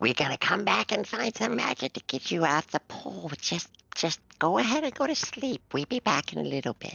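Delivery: high character whisper. Kurtu comes over and whispers to these folks: Kurtu whispering. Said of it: "he whispers to these folks".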